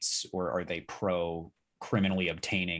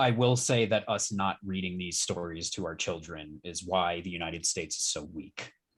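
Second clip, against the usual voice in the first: ordinary delivery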